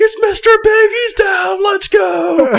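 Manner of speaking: frenzied, very high-pitched, loud triumphant shout. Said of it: "He's going nuts".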